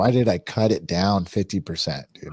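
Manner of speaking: ordinary talk, nothing marked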